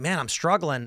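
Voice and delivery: ordinary talk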